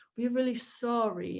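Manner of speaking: plain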